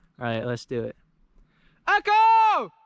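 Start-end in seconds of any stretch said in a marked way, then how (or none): 1.9-2.7 very high, long, ringing, loud yell. Testing for an echo on a mountain trail: yelling really loud. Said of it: "I'm gonna yell "Echo" really loud".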